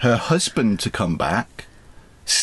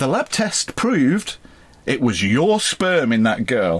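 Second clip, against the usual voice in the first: mock-solemn, dead serious, grave voice. Retelling a case to the other speaker, quoting the coroner in a very serious voice. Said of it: "in a very serious voice".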